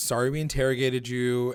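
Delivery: ordinary delivery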